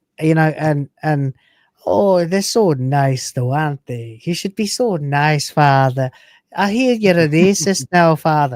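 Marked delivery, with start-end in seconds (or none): 1.9-8.6 put-on old Irish man accent, bumbling, way too nice. Imitating a way too nice old bloke, probably Irish: put-on way too nice Irish bloke. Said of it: "some bimbling old bloke who is way too nice and probably Irish".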